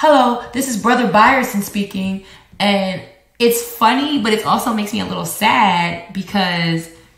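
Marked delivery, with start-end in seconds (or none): 0.0-2.3 put-on child's voice, high-pitched. Retelling how Tatum pretends to be T J, imitating Tatum pretending to be T J. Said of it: "she'll pretend she's T J, and she goes".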